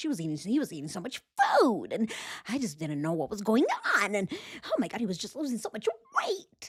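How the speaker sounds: rapid, fast, swooping, all-over-the-place up-and-down inflection. Speaker mimics a woman's way of talking, imitating her up-and-down inflection. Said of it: "She goes up, she goes down. She's really fast".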